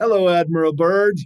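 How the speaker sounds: put-on German-accented voice. Retelling a greeting that came over the wire: german accent. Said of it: "with a German accent".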